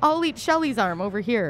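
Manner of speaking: ordinary talk, nothing marked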